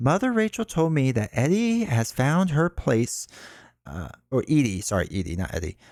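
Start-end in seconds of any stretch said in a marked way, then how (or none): 0.0-3.3 lilting singsong tone, higher pitch. Voicing the teacher answering a child's question: sing-song voice. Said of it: "She replies in a sing-song voice".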